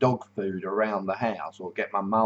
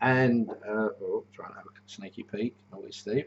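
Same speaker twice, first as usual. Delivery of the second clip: ordinary delivery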